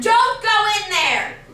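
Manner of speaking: slow, loud, high-pitched scream.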